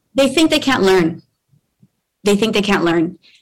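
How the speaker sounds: emotional, feeling welling up, with words repeated. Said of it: "and I get emotional. I'm sorry".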